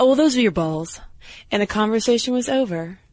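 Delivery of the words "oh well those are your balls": very nonchalant, casual, unbothered offhand delivery. Retelling the oldest nephew's reply about testicles: imitating a nonchalant answer. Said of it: "very nonchalantly goes".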